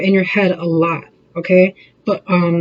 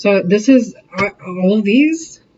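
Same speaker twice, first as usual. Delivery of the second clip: slow, halting stammer, stuttering over the words. Doing a reading for a listener; stuttering. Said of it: "I'm stuttering so hard".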